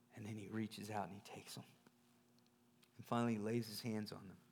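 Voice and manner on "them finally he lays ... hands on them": ordinary talk, nothing marked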